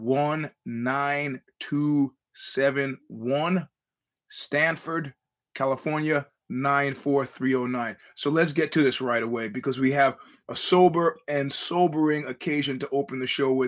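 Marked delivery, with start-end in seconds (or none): 0.0-8.0 very slow, deliberate, carefully spaced-out reading. A show host reads out the P.O. Box address, speaking very slowly. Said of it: "I'm going to speak slowly now".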